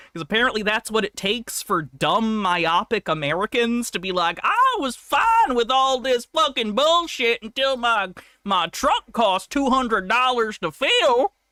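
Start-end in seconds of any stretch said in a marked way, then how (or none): 4.4-11.2 put-on, higher-pitched Southern drawl. Mocking what a voter might say about gas prices: put-on southern accent. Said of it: "I shouldn't use Southern accent".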